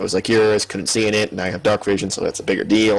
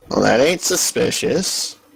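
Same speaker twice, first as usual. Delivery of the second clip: dry sarcastic dwarf voice, higher pitch; 3 semitones higher than usual. Reacting in character to news of imposters: sarcastic dwarf. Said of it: "says the sarcastic dwarf".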